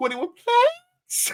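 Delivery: cracking squeak, pitched way up. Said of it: "His voice gets so squeaky high".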